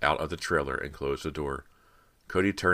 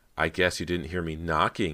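plain

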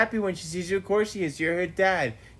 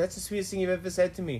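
ordinary talk

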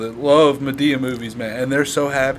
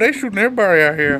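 sassy, pitched-up grandma voice with attitude; 7 semitones higher, 4 dB louder than usual. Chatting with a friend about a shooting story, asking what was said: Madea voice. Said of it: "That was my Madea voice".

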